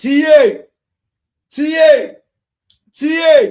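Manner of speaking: high, loud, repeated shout.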